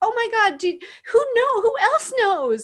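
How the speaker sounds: very high, loud, thrilled and amazed gushing voice. Retelling a woman's reaction to learning the speaker was her daughter; imitating thrilled amazement. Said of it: "she was so thrilled".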